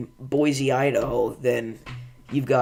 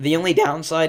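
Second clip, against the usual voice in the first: voice cracking badly and horribly; 4 semitones higher than usual. A speaker recommending an event to listeners, with a horrible voice crack. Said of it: "that was a horrible voice crack".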